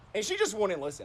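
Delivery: normal talking voice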